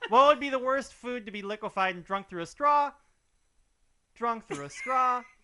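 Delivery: exaggerated high rising tune on final "straw". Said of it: "let me go higher".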